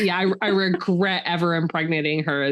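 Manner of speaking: ordinary talk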